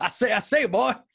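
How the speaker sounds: big put-on Southern gentleman cartoon voice, leaning hard. Told to pretend to be Foghorn Leghorn, doing a Foghorn Leghorn voice. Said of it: "pretend you're Foghorn Leghorn".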